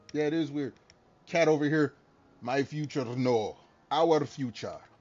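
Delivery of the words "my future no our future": very slow, low, bad, fake, horrible Russian accent. Speaker hamming it up mid-conversation, horrible Russian accent. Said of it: "I'm gonna keep doing this horrible Russian accent".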